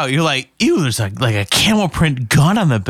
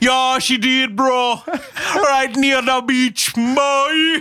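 very high, fake, put-on Jamaican accent; 10 semitones higher than usual. Podcast host answering a co-host's question about Cleo, in a put-on Jamaican accent. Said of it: "This Jamaican accent, I'm done doing it".

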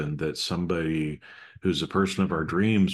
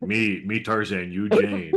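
mock caveman speech; 3 semitones higher than usual. Joking with the other speaker, using mock caveman speak. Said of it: "I'm using my caveman speak".

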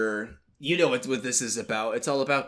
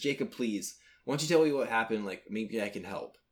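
imitated pleading tone, quieter; 5 dB quieter than usual. Retelling how a character begs another to explain: imitating someone begging. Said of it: "begging thing again".

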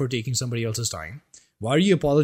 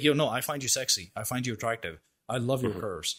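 put-on bold, self-assured, confident and direct delivery; 2 semitones lower, 7 dB quieter than usual. Acting out a confident guy complimenting a woman: put-on confident direct compliment. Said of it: "they're confident enough in themselves".

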